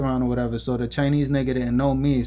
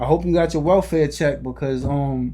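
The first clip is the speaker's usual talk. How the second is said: ordinary talk, nothing marked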